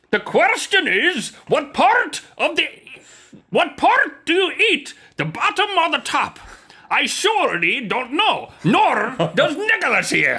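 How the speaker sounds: very high-pitched fake, put-on Scottish accent. Opening a show segment alongside Rhett, put-on Scottish accent. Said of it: "What part of Scotland are you from?".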